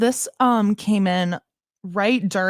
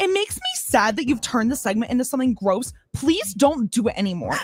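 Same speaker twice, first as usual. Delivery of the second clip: raised-pitch tone; 5 semitones higher than usual. Reading a listener's text aloud, imitating the texter's tone. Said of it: "in the tone that you think that it was".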